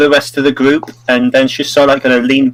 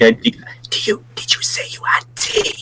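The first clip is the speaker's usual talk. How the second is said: loud whispered shout meant to carry; 7 semitones higher, 7 dB quieter than usual. Voicing her asking across to Zabornak about the tea, in a shout whisper. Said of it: "whispering like shout whisper over Zabornak".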